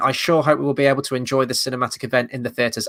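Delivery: plain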